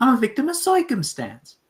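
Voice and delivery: very high, sing-song, swooping put-on character voice. Introducing Curly, the speaker answers for him in Curly voice. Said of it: "let me do the voice".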